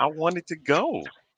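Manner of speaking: upset voice, very high and soft. Replying after being asked why you sound so upset, upset. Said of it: "why you sound so upset".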